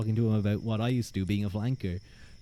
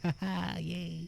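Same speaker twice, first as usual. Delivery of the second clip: put-on happy, tipsy cheer, high and creaky; 7 semitones higher, 9 dB quieter than usual. Showing how one acts when drunk: imitating happy drunk self. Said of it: "I'm a very happy drunk".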